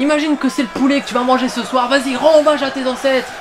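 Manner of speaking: mock loud yelling.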